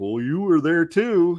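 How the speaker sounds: silly high-pitched cartoon voice. Retelling a cartoon scene where Skeletor dresses him down: dumb Clawful voice. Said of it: "with his dumb voice".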